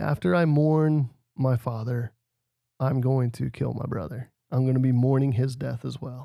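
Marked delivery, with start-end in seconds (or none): none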